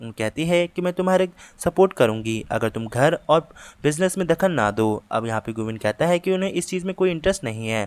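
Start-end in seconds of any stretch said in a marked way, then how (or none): none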